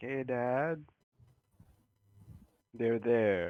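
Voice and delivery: gentle little character voice. Floaty relays the message to his dad in a soft, very gentle little voice. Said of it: "relays the message in a soft, very gentle little voice".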